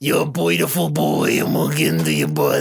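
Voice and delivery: put-on very low, swooping, gurgling, gargled voice. Speaker acts out three guys propositioning a man, in a gargling voice. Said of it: "Are you gargling?".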